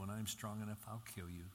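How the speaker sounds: usual speaking voice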